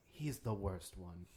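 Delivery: whispering in character. Turning back to the group in character and whispering: whispering in character. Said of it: "turn back to everyone and whisper".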